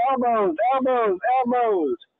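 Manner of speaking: high, drawn-out yell. Recounting a fight and what the speaker yelled, re-enacting own yelling. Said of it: "Then I'm yelling".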